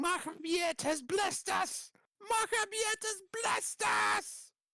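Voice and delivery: screamed at a very high, shrill pitch. Voicing fleeing figures as they run off: screaming. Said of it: "just screaming".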